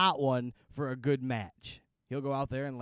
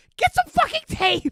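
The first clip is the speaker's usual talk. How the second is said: shrill, very high, very loud all-out scream; 11 dB louder than usual. Retelling a wrestler yelling at his manager for tape: imitating Sabu screaming. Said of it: "he just screams".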